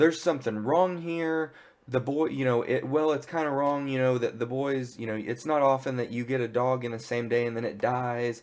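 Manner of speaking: plain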